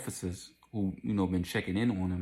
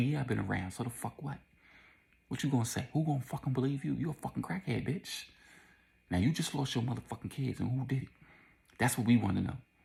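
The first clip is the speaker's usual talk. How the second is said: put-on whisper, higher pitch; 5 semitones higher than usual. Retelling what an officer said to a woman: imitating a whispered threat. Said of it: "whispering it to her".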